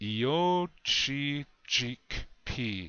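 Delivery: said slowly, unhurried pace. A teacher models a word for learners to repeat after, said slowly. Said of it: "I will say it slow".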